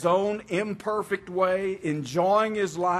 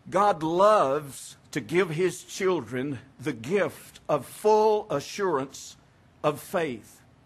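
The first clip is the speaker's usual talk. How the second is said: slow, careful, deliberate reading. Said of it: "I'll read this slowly because it's deep".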